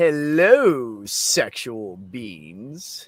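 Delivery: loud, flashy, showy tone with drawn-out hello. Greeting the chat the way Mikey did, imitating Mikey's delivery with flair. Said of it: "put a little flair on how you were playing".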